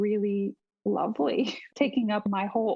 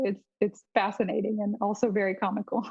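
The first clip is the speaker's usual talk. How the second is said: ordinary talk, nothing marked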